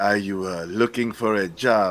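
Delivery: slow, clumsy, really bad fake Italian accent. Acting out a man asking about a job, in a bad Italian accent. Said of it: "That was my Italian accent".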